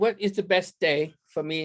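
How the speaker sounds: put-on British accent. Retelling a British client's question about the best day, in a British accent. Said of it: "that's why I lapsed into a British accent".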